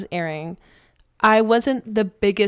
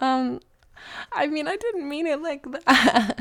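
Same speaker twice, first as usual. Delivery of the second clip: teary, pitched-up voice on the verge of crying; 6 semitones higher, 3 dB quieter than usual. Responding to being teased about rooting for the bully, sounding teary. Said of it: "Are you crying?".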